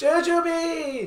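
high, slow, screamed cheering. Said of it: "us just screaming".

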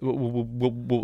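stammering, stumbling delivery.

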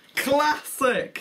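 loud, very high, forceful stress on classic. Echoing the other speaker's word, louder emphasis on classic. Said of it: "Said it louder at the end of the sentence. You know, for emphasis".

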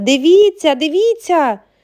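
sudden loud, high cry. A girl points at the window, shouting to everyone in the room. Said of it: "закричала".

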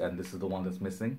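ordinary delivery

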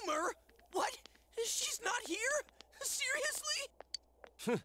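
very high, drawn-out, crushed, devastated disbelief. Reacting to news that the idol isn't here: devastated disbelief. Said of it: "You sound like the world's about to end".

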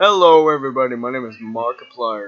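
very deep, low announcer voice. Running through YouTuber impressions, now doing a Markiplier impression. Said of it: "Some YouTuber impressions".

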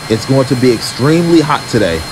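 ordinary talk

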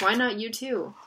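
ordinary delivery

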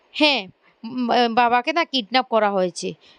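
ordinary talk

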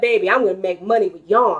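ordinary delivery

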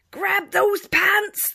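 very loud, very high, shrill, booming pirate captain roar. Reading a pirate story aloud as the captain shouts at rival pirates: roaring pirate captain. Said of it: "the captain roars".

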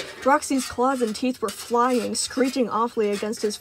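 plain reading voice

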